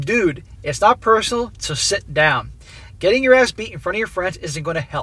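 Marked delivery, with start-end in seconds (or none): none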